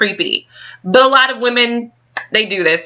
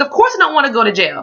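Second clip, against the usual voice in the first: sassy tone full of attitude; 4 semitones higher than usual. Retelling a woman's reply to him on the phone: imitating someone with attitude. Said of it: "she kinda gets attitude like".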